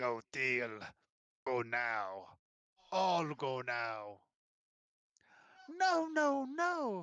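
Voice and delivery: hissing, sibilant, halting, labored, very slow speech. A lizard folk lowers its spear to address the woman, in sibilant, labored speech. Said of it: "in sibilant, labored common".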